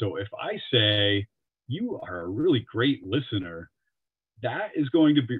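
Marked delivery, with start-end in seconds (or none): 1.7-3.7 sarcastic, mocking tone. Explaining how tone changes meaning, giving an example: sarcastic tone.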